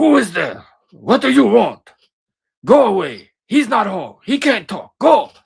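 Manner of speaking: very loud, very high, shrill, swooping mean shouts. Recalling the woman at the church rectory who yelled through the door: imitating a mean lady yelling. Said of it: "she would like yell at you through the door".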